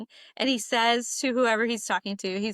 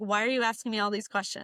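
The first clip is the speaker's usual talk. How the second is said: put-on angry outburst. Speaker retells a man's reaction to her single question, mock-angry accusation. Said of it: "He lost it, switch flipped".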